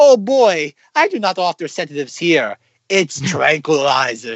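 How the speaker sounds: put-on German accent. Recounting a scene while watching it, voicing Uncle Heinrich's German accent. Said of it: "he's talking in a German accent".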